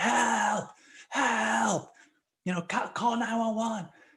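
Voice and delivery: very high, stretched-out, drawn-out frantic yelling. Recounting holding someone above water in a pool, retelling a yell for help. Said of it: "I'm just yelling like".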